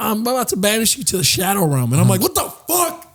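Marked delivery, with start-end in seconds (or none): 0.0-1.9 put-on nerdiest, nerdy kid voice. Recalling playing Yu-Gi-Oh at recess against other kids, nerdy kid voice. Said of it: "the nerdiest fucking kids that are like".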